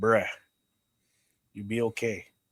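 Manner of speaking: put-on heavy, laid-on-thick Samoan accent. Retelling a big wrestler's reassurance, hand on the shoulder: Samoan accent. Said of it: "in the most Samoan voice".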